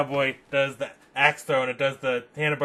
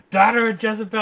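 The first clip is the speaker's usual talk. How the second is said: abrupt, loud, high shouted outburst; 8 semitones higher, 7 dB louder than usual. Retelling a scene where a cowboy character yells: imitating a yell. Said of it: "comes in right afterwards and just yells".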